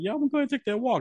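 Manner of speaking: high, rushed, meek, yielding voice.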